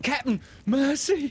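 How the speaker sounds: very high, trembling, shrill whimpering voice. A crewman singled out by his captain as mutiny ringleader, trembling whimper. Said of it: "Starkey whimpered, all a tremble now".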